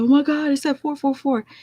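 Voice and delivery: high, panicked, flipping-out cry. Retelling seeing the number after the call: retelling freaking out. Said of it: "And then I started flipping out".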